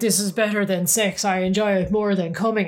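plain

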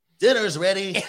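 loud, high-pitched announcing voice. Retelling a family story about Larry calling the guests, imitating Larry's voice. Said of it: "Do it in Larry's voice".

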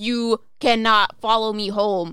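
very loud, slow, firm commanding voice. Demonstrating the stereotypical way people deal with it, saying it with authority. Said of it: "you have to say it with authority".

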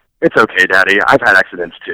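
earnest, tender, loving tone, pitched low. Retelling what a young son said to console: imitating Graham's serious, loving tone. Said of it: "in a very serious and very, you know, loving tone".

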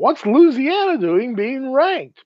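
high, slow, mocking put-on voice.

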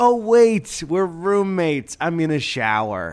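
stagey, high, slow made-for-TV line delivery. Retelling own past words to a roommate: Lifetime movie line delivery. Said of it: "Lifetime movie l-, line delivery".

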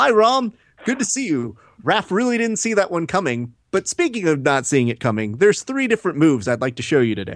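eerie, unsettling put-on voice, high and sing-song. Acting out what John will say into the camera: eerie impression of John. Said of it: "that's an eerie voice".

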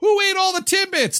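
very high, screaming, accusatory yell. Retelling finding an empty timbits box: imitating own past screaming. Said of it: "I'm screaming at the other members of".

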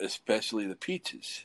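put-on German accent. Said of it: "her thick, real accent, which is ju-, like a German accent".

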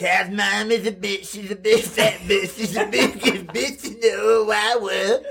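put-on high, bratty cartoon kid voice. Friends naming cartoon characters, one does a Cartman impression. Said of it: "That was my Cartman impression".

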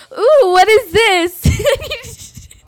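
shrill, booming, very loud, high, very slow exclamation. Retelling what the other speaker does in the store: imitating someone being loud. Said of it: "you're so loud".

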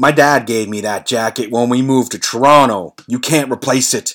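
angry, fairly heated voice. Retelling how someone answered an offer to replace his jacket, imitating an angry voice. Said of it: "in a pretty angry voice".

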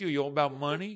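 soft, poorly done put-on New York accent. Repeating a quoted line for the other hosts, in a New York accent. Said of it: "And that's my New York accent".

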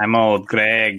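put-on creepy character voice. Doing the voice right as demanded: Old Greg voice. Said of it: "You gotta do the voice right".

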